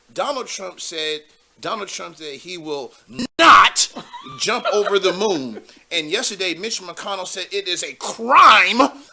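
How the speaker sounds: emphatic cable-news anchor delivery, punching key words. Speaker imitates a TV news anchor reading the news, with emphasis on certain words. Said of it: "she like puts emphasis on certain words".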